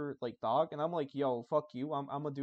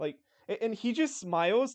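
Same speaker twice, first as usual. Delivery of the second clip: ordinary talk, nothing marked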